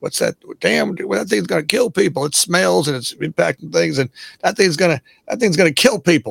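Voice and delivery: put-on Old West Southern accent. Imitating a stagecoach driver seeing a car for the first time: southern accent. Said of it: "I don't know why they're talking with Southern accent".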